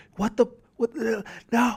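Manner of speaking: put-on, very high, shrill, frantic screaming freak-out. Retelling a video of a fan at the final play: imitating a fan screaming. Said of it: "He starts screaming at".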